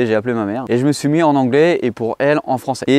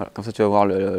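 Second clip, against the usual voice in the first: ordinary delivery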